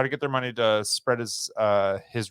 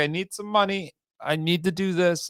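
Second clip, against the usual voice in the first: acted, high, begging, pleading voice; 10 semitones higher than usual. Acting out a desperate request for money: imitating someone pleading. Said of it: "he pleaded with them".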